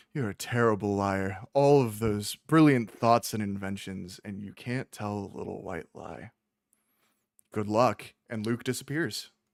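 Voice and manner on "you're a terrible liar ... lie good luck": condescending, patronizing, mocking, belittling tone. Luke leans down to the player after a weak deception roll, condescending Luke. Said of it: "leans down to you as condescendingly as possible and goes".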